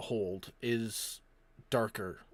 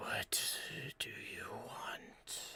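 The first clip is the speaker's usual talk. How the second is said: eerie, very slow, drawn-out whisper; 6 semitones higher, 5 dB quieter than usual. Voicing a figure speaking from the shadows of a ship's hold: eerie voice from the shadows. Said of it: "an eerie voice creeps out of the shadows".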